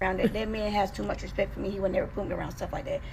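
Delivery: normal talking voice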